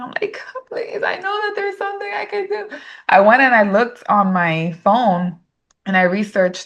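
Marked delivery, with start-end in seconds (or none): 0.7-2.7 play-acted crying, very high-pitched, tearful pleading tone. Retelling a desperate morning prayer: retelling a tearful prayer. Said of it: "I was crying".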